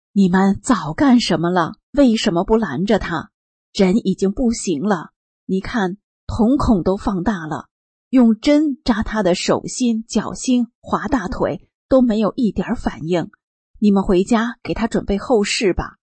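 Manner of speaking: normal talking voice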